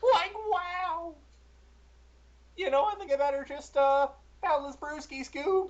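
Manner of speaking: very high cartoon voice, pushed way up. Trading cartoon impressions with a friend, doing a pretty decent Shaggy impression. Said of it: "a pretty decent Shaggy".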